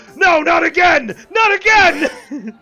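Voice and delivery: yelling loudly. Voicing the bartender as a bar fight breaks out: bartender screaming. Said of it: "the bartender screaming".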